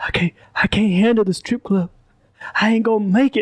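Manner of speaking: muttered under the breath, mumbled and indistinct. Retelling own words while friends plan the night: imitating muttering under breath. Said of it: "I remember under my breath".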